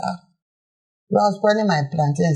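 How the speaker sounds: normal talking voice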